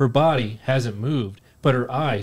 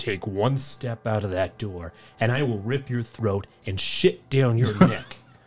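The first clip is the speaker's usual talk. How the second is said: exaggerated, overly deep, menacing horror-movie voice; 4 dB quieter than usual. Quoting his girlfriend forbidding him to leave through the door: too-deep horror voice. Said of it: "she says in a too-deep horror voice".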